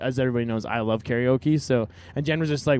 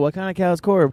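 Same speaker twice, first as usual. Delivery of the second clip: high-pitched shouting like a concert crowd; 7 semitones higher, 4 dB louder than usual. Retelling what people in the crowd yelled: imitating a crowd yelling. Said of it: "a bunch of people yell".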